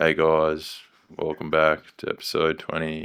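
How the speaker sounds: soft, flat, lifeless, unenthusiastic monotone. Podcaster showing how an intro sounds when not confident, flat and unenthusiastic. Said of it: "not everyone wants to be listening to someone like this".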